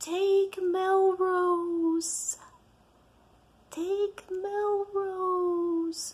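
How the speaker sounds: tiny, small, high voice, very slow. Recalling a drive, the speaker quotes the voice that spoke up: little tiny voice. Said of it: "this little tiny voice just went".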